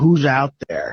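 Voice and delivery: ordinary talk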